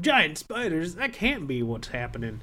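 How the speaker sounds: put-on Southern US accent. Retelling what movie characters said, in a southern accent. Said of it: "that's not the accent he was using, but in my mind, everybody has a southern accent".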